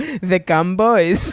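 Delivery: put-on mom voice. Retelling mom saying the show's name: imitating mom. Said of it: "just hearing my mom go".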